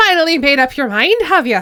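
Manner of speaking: put-on Irish accent. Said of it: "I'll make him Irish".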